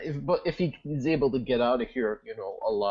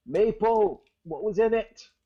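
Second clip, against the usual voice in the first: loud, very high-pitched calling shout; 9 semitones higher, 5 dB louder than usual. During a tabletop game, a player's character calls to someone above, shouting up. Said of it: "I'm gonna shout up and go".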